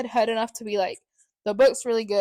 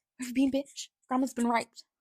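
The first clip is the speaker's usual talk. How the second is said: put-on Australian accent; 2 semitones higher, 5 dB quieter than usual. Retelling what they blurted out without realizing who was in the room, in an australian accent. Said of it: "I start talking with like a an Australian accent".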